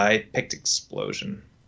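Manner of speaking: glum, gloomy, downcast. Telling the other player which option was picked, glum. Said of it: "You said that very like glummy".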